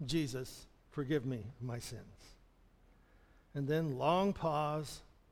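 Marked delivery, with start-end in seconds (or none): 0.0-2.0 low, quiet mumble, words barely formed. Speaker retelling how a woman repeated a prayer after them: mumbling. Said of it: "And she mumbled".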